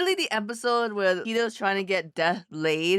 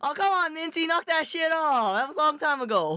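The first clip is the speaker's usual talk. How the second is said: put-on Boston accent, high-pitched; 7 semitones higher than usual. Brushing off teasing about an old story, boston accent. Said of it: "we're doing a Boston accent".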